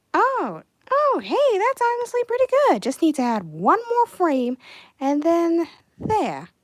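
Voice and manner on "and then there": Boston accent on the word there. Speaker finishing an animation frame, slipping into a Boston accent. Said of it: "Why am I saying there in a Boston accent?".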